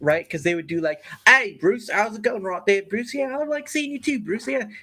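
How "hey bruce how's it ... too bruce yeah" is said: Australian accent in exaggerated sketch-comedy style. Describing a comedy skit, the speaker launches into a Monty Python Australian accent. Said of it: "the Australian accent one".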